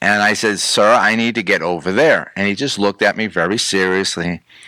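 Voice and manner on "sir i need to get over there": ordinary talk, nothing marked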